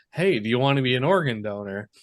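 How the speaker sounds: ordinary talk, nothing marked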